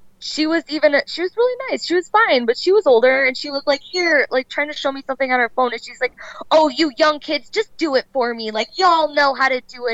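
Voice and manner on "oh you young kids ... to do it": patronizing, condescending, talking-down tone. Imitating an older woman asking for help with her phone: mock-condescending. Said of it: "it's so condescending".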